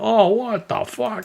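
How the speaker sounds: mock very high, outraged cry. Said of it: "making a scene".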